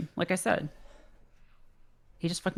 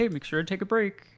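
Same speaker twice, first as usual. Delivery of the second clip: usual speaking voice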